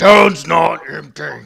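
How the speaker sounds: very loud, rough, rasping orc shout. Voicing an orc who cries out to the party: orc crying out. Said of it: "you hear the orcs cry out".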